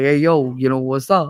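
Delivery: put-on Bensonhurst Brooklyn accent. Describing how people in brooklyn talk, in a brooklyn accent. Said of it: "I love the Brooklyn accent".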